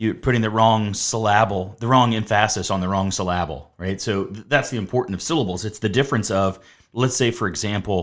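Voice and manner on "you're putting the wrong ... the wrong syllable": ordinary delivery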